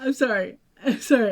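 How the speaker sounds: talking while still laughing. Apologizing to the other speaker for laughing: laughing while talking. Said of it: "Can you stop laughing?".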